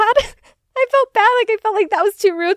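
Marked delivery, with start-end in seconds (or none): 0.0-1.3 much higher, slow, loud laughing, exaggerated guilt. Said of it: "But then I felt bad".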